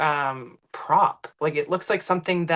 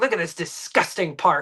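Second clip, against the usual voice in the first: imitated rude tone of voice. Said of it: "they're so rude".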